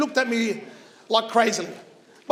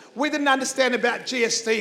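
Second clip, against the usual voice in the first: normal talking voice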